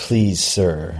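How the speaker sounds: normal talking voice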